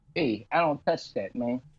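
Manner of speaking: Italian mobster-style voice. Discussing who will take over Lucasfilm, voicing Kevin Feige: Kevin Feige as a gangster. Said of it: "My my uh gangster voice".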